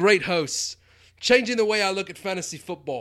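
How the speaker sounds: loud, high put-on Australian accent, slipping about. Voicing an imagined Australian listener of the podcast, put-on Australian accent. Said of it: "I don't know what my accent just did there".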